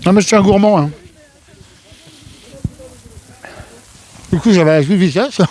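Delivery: speaking while chewing, mouth full. Addressing viewers while eating a marshmallow teddy bear, talking with mouth full. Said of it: "Désolé, je suis en train de manger mon nounours".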